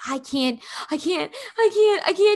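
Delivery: put-on high sobbing, gasping, hyperventilating crying. A mother retelling her son losing it, imitating someone crying. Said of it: "like crying".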